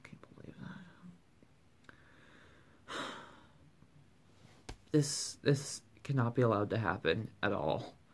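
hushed, emotional near-whisper, overcome with feeling. Speaker thanking viewers for their years of support on YouTube, getting emotional. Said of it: "Seriously I'm about to get emotional".

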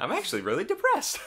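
very high, loud, all-cheer voice. Quoting a favourite line from a game demo: pleasant cheery Claptrap voice. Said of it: "this really pleasant, cheery voice".

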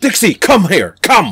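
loud, high-pitched, commanding tone. Imitating a film character who orders his girlfriend around like a dog. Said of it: "order her around literally like a dog".

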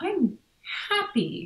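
high, small voice in real surprise. A doctor retelling a woman who came in to tell them something, imitating someone surprised. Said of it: "she said it in such a surprised way".

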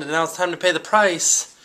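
normal talking voice

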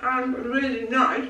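speaking with a full mouth. Mid-bite during a pastry tasting, the speaker talks with mouth full. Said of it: "talking with my mouth full".

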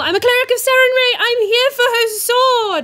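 very high, loud, called-out yell. Calling out in character to an animated statue: yelling in character. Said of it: "I'm just gonna yell".

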